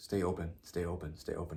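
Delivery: soft, hushed, repeated murmured stage half-whisper. Retelling what someone half-whispered in their ear: imitating someone half-whispering. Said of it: "just whispering".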